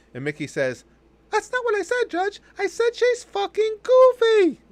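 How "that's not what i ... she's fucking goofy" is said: squeaked out high and loud. Telling a joke, Mickey answers the judge in divorce court, in a bad Mickey Mouse impression. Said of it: "without the bad Mickey impression".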